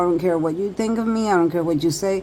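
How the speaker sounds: ordinary delivery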